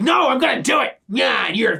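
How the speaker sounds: put-on brash, loud, in-your-face, high, drawn-out outburst. Imitating Lloyd's loud, in-your-face manner: imitating someone loud and in your face. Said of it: "in your face loud".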